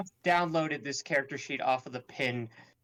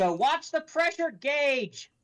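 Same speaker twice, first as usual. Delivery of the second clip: shrill, very high, in-character shout; 14 semitones higher than usual. Player in a tabletop game yelling down at Harg, yelling in character. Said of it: "I'm gonna yell down at Harg".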